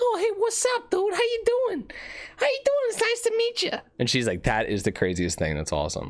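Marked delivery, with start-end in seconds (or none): 0.0-3.7 very high little character voice, going way up. Retelling meeting a woman and doing the voice for Planky. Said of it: "I started doing the voice".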